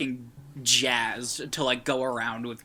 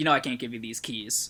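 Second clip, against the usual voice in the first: plain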